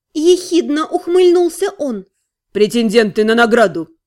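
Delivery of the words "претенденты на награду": dry, much lower, faster. Answering a young alchemist's sneering question about his companions, a dry reply. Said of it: "сухо ответил тот".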